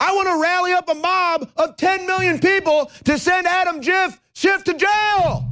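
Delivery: shouting.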